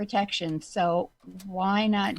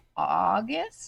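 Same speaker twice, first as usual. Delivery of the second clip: very slow, stretched-out, drawn-out word. Reacting to a long wait between reopening phases: said really slowly. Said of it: "Do you wanna say it really slow like that again?".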